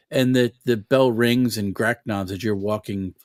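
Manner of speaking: ordinary delivery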